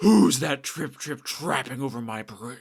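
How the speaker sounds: plain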